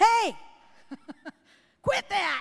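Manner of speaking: loud high shout. A parent retells yelling over a racket of noise: retelling a yell. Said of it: "I yelled".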